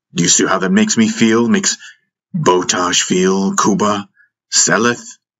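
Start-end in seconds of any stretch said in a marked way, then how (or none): none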